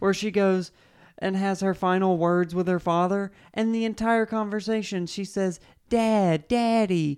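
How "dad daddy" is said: put-on sad, childlike little-girl voice. Describing a film character's final words to her father, in a put-on sad little girl voice. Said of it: "does this like sad little girl thing".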